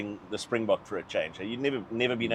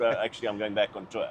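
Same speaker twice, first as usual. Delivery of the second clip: plain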